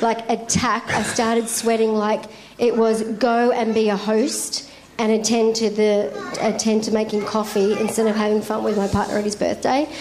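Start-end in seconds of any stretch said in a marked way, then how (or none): none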